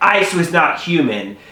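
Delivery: ordinary talk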